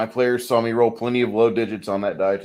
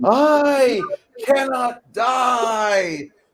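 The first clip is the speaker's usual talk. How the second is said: high, loud scream. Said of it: "Zine screaming".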